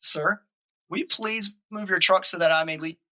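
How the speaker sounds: play-acted, sweetly polite, as nice as can be. Retelling asking the angry guy to move his truck: retelling saying it very nicely. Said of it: "in the nicest way I could".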